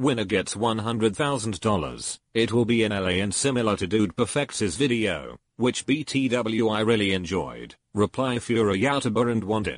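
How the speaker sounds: synthetic, robotic machine voice. Speaker reads aloud a tweet announcing an event, in a computer voice. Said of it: "I'm just going to use a computer voice".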